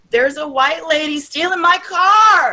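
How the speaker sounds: mock shrill, very high booming scream, car stretched long. Retelling what a car owner screamed during her repo, booming scream. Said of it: "this guy screaming".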